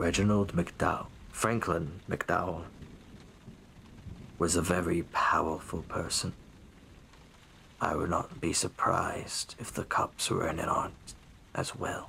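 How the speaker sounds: hushed, confiding voice. A game master voices a man who looks around and leans in: hushed voice. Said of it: "in a v- more hushed voice than he's talking now".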